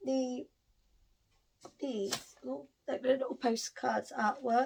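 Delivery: rough, hoarse, croaky voice. Describing postcard artwork near the book cart, the speaker talks in a croaky voice. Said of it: "I've got a right croaky voice".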